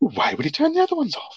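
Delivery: tiny, very high, whispery little voice. Retelling a film scene, quoting Hammond: little whispery Hammond voice. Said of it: "This really little, like, whispery voice".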